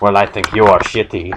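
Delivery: ordinary talk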